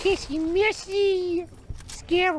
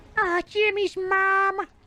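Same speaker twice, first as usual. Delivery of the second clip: put-on nasal, wheezy cartoon kid voice. Showing off voices to friends, the speaker tries out a Carl Wheezer voice. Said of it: "Can I do Carl Weezer?".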